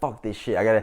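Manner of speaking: ordinary delivery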